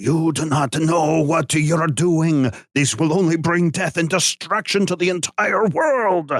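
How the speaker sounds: put-on half Russian, half Italian blended accent. A voice speaks into a player's head, in a Russian-Italian accent. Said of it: "sounds halfway between Russian and Italian".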